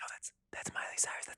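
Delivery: very soft, quiet whisper. Telling a story about a crew correcting their boss, imitating a whisper. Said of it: "They're like whispering to him".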